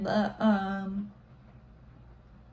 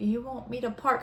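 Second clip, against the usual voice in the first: usual speaking voice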